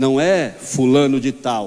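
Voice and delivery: low, slow solemn voice.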